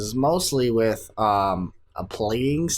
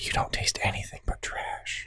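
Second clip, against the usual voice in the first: soft, unvoiced, mean ASMR-style whisper. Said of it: "Hold on, I got one more".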